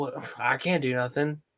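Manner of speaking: imitated sad tone. Retelling a scene where she can't access anything: imitating someone sad. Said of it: "she's all sad 'cause she's like".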